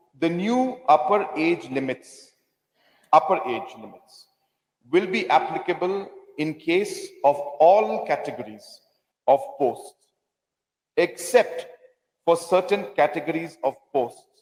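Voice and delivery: very slow, careful, deliberate reading aloud. Reading a quoted rule aloud to the members, reading very slowly. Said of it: "I'll read it very slowly".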